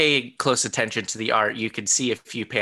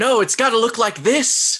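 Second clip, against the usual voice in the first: mock very high, loud yell; 11 semitones higher, 5 dB louder than usual. Imagining a director yelling at everybody on set: imitating Jon Favreau yelling. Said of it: "yelling at everybody".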